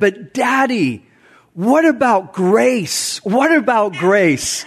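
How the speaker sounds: put-on passionate, earnest, heartfelt pleading in a child voice. A father retells his three-year-old daughter's words on the stairs, imitating a passionate plea. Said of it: "with this like passionate voice".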